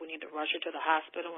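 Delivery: ordinary delivery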